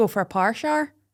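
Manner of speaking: put-on Irish accent, aiming for Northern Irish. Trying out accents with a co-host, the speaker says a phrase in an Irish accent. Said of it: "When I'm ever doing an Irish accent".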